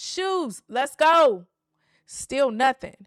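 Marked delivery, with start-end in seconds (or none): 0.0-1.5 repeated call, slightly raised, a bit louder. A parent repeats the call for the kids to put their shoes on, a little louder. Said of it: "say it again a little louder".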